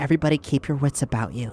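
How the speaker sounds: hushed whisper. After a guard squints at them, the player's character whispers to everyone. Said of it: "and I whisper".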